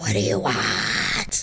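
very deep, low, hellish demon voice. Retelling being interrupted in the bathroom, answering him: demon voice. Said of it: "It's my demon voice".

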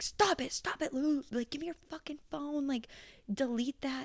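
put-on angry screaming, high-pitched. Recalling a man demanding the speaker's phone, retelling his screaming. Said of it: "screaming at me like".

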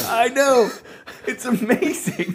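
very high, slow mock gushing. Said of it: "I was like".

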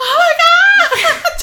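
mock shrill, very high, loud burst of panic. Recalling being stuck on a military base during a tornado, reenacting her own panic. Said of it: "And I was panicking".

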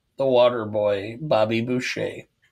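ordinary delivery

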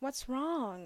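put-on sweetest caring teacher voice, high and kindly. Retelling what a teacher asked a crying second grader: imitating a teacher's sweetest voice. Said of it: "And in the sweetest voice too".

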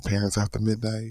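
adults-only late-night voice. Recalling recording the intro, the speaker says it in a mature-audience voice. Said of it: "my voice is like for mature audience only".

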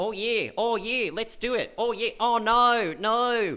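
very slow, high, seductive Australian accent. Showing why the australian accent is not sexy: australian accent in a bedroom. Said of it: "this accent is not a sexy accent".

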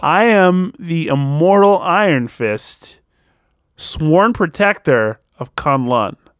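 slow, deliberate, word by word. Repeating a quote again for the others, saying it again slower. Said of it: "I'm going to say it again slower".

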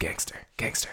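soft unvoiced whisper under the breath.

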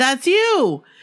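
thrilled, eager tone. Recounting how a man turned and saw the girls from the paper, retelling excited speech. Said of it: "So excitedly".

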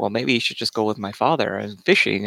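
relaxed, understated, low-key, laid-back voice. Describing a side character by imitating how he talks: low-key voice imitation. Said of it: "a real kind of, like, low-key".

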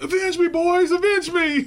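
high, loud dying yell.

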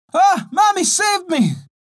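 high-pitched, stretched-out, frightened cry. Narrator reads a girl's line as snakes approach the cottage, girl crying out. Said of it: "cried the girl".

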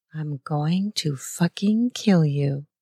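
ordinary talk

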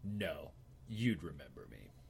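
imposing, low voice, bristling with menace. Playing a character answering a goblin's question: imposing and threatening. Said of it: "I'm trying to be imposing and threatening".

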